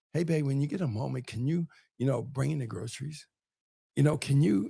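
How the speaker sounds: mock soft feminine tone. Acting out asking a man for help: imitating a soft feminine request. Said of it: "use that feminine energy".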